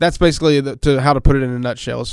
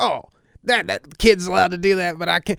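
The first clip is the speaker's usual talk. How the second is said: put-on indignant, angry teenager voice, pitched up; 5 semitones higher than usual. Explaining how an older student reacts to a younger kid's privileges, angry high school senior voice. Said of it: "angry high school senior voice".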